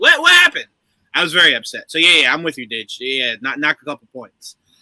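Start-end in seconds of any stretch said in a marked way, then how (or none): 0.0-0.7 high, loud alarmed confusion. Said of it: "I'm like".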